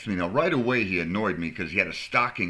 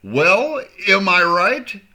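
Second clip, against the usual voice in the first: very loud, very high, drawn-out annoyed voice; 12 semitones higher, 9 dB louder than usual. Retelling asking a man in line one last time: retelling an annoyed question. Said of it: "I'm starting to get a little annoyed".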